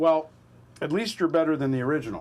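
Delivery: normal talking voice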